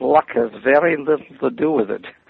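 very strong, thick put-on Viennese accent. Retell his reply when you said you were just chosen for a television show, in a thick Viennese accent. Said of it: "in his very st- strong, thick Viennese accent".

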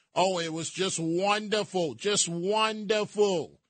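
heavily sarcastic, put-on delight and fake-glowing praise. Speaker calls for applause for New York's first sale, which they oppose, sarcastic. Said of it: "I hope you hear the sarcasm".

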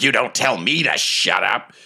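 rough, gruffer goblin talk. Imagining a goblin scene in a Lord of the Rings musical, gruffer goblin voice. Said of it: "you hear sort of a gruffer voice say".

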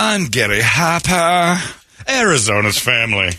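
put-on slow, unhurried English accent. Imitating a news anchor signing off a report: English accent as Gary Harper. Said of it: "he's got an English accent".

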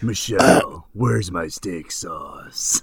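low pitch, kept flat and even. Imagining the Undertaker at home asking for sauce: Undertaker voice. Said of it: "Can you imagine?".

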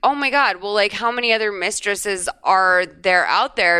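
usual speaking voice

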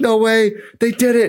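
very high, squealing scream of disbelief. Telling a story, the speaker replays their own reaction to the news: retelling own excited scream. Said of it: "And I'm just like screaming".

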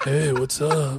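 put-on grizzled sultry voice. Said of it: "It makes it a little more grizzled and sultry".

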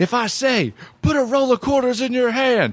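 play-acted, shrill, very high-pitched yelling. Retell how he was going off on you as you stood there laughing, imitating someone yelling. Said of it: "he's yelling that at me".

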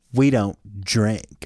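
acted smug, snooty, as snide as possible. Imitating a diner's comment to a server: imitating a snarky customer. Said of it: "It sounded something like this".

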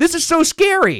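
very high, scared, frightened shriek. Recalling yelling to strangers in a boat, retelling a scared yell. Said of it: "I remember yelling in the boat".

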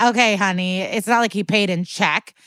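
ordinary talk, nothing marked

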